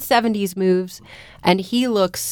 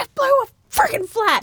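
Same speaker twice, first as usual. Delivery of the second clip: mock very high, fed-up, mad angry outburst. Retelling a movie scene where a character gets a flat tire: imitating someone angry. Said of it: "She's so mad".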